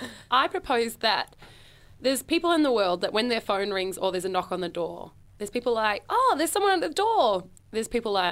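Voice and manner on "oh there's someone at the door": higher, cheery, pleased, upbeat voice. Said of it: "Positive, negative, and terrified".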